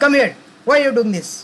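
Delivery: loud reprimanding tone. Speaker shows how to scold someone so the tone alone gets through: loud scolding. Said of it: "You have to be very loud".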